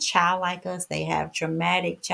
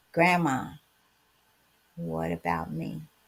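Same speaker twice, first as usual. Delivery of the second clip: mock small, trembling little voice through tears; 2 semitones lower than usual. Retelling someone's tearful question to Grandma: imitating a tearful, shaking little voice. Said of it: "She had tears and her little voice was shaking".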